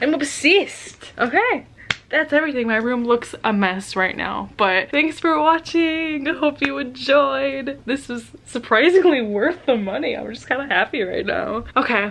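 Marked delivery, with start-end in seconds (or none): 0.0-1.1 put-on New Zealand accent, best attempt. Talking to viewers about a new bag, Ella's New Zealand accent. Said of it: "in my best Ella New Zealand accent".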